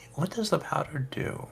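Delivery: hushed, soft, high half whisper. Leaning in to ask Miss Yuki what the powder does: whispering. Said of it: "I lean in kind of whispering".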